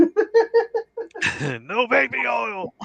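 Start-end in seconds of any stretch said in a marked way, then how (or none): 1.7-2.7 high-pitched mocking giant shout. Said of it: "And Andre would yell at him".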